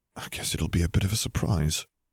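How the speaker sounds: ordinary delivery, nothing marked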